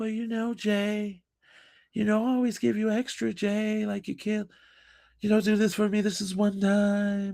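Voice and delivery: mock tired, drawn-out voice. Retelling what a customer used to say: imitating a tired, drawn-out voice. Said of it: "she always used to talk like she was super tired".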